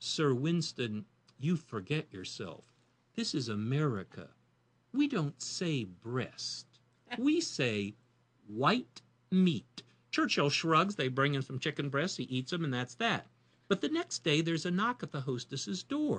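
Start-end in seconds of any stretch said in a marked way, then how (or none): 0.0-9.8 slow, haughty, condescending, talking-down tone. Telling a story, the speaker quotes a snooty hostess scolding a guest: mock-condescending. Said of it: "in her most condescending way".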